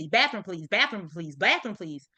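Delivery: fast, urgent, insistent pleading tone. Imitating a son who badly needs the restroom: imitating an urgent request. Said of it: "he may say it with urgency".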